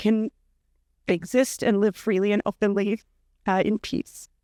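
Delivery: halting delivery, voice breaking up with emotion. Sharing a personal story with listeners, speaking emotionally. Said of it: "I apologize for being emotional".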